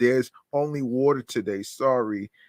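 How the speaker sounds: ordinary talk, nothing marked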